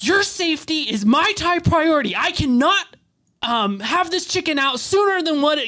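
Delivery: mad, irritated tone. Retelling how a man spoke to the speaker, coming across mad: imitating an irate tone. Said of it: "just irate tone of voice".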